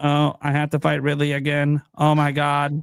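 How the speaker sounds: low, slow, level put-on deadpan monotone drone. Mocking a video game character who never acts scared, in a flat monotone. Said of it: "she's monotone about it the whole time".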